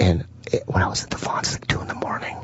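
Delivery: soft, hushed, breathy whisper. Telling a story about a two a.m. store visit, whispering. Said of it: "I don't know why I'm whispering".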